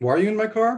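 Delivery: very nice, kindly tone, pitched way up. Retelling what the car's owner asked when the speaker got in: a very nice way. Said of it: "He said it in a very nice way".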